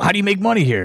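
very high, shrill, demanding yell. Retelling how a man demanded an answer from you about money, imitating someone yelling. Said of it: "He starts yelling at me".

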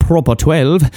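put-on not very good Irish accent. Naming a whiskey brand: bad irish accent. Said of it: "Definitely not a very good Irish accent".

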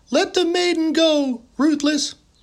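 frightened, fearful voice, pitched very high. Narrator reading the boy's reply to the mocking orc, voice filled with fear. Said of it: "his voice filled with fear".

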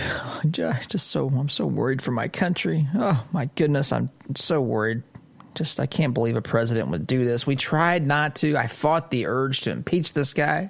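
weepy, near-tearful, crying lament-like voice. Mocking the somber impeachment moment: mock crying Nancy Pelosi impression. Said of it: "Nancy Pelosi was borderline crying as she was".

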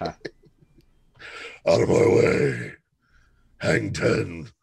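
rough, creaky and gruff character voice. Picturing him surfing while doing the Mick voice, in the Mick voice. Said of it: "doing the Mick voice".

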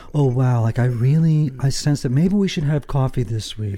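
put-on FM radio voice. Showing how people are supposed to talk, doing the FM voice. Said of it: "That's the FM voice".

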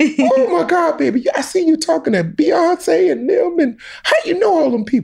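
voice pitched very high. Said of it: "The voice".

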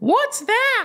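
very high, loud, squeaky blurted words. Retelling a student's loud question in class: loud Ralph Wiggum voice. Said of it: "imagine Ralphie's voice from The Simpsons, loud enough for everyone".

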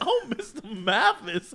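high-pitched Southern belle voice. Imagining a chat with Scarlett O'Hara, doing a Scarlett O'Hara impression. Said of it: "And she'd be like".

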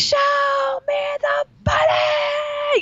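put-on very high, very slow scream, "money" stretched. Retelling a favourite movie scene on the phone: imitating Tom Cruise screaming.

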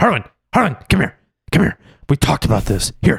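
threatening stern voice. Acting out taking a grown friend to the bank: scary dad voice. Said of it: "I'm just a very scary dad".

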